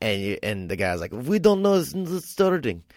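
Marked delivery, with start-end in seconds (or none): 1.1-2.8 put-on Mexican accent, pitched much higher. Retelling what the valet guy said about Adam's car, in a Mexican accent. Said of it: "That was my Mexican accent too".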